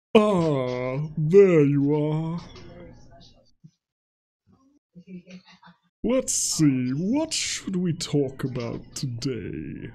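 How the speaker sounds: put-on demon voice with drawn-out "ah". Asked by another player to do a demon voice, greeting someone in demon voice. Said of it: "He demands that I do demon voice".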